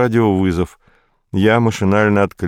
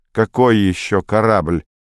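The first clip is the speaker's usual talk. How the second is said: ordinary delivery, nothing marked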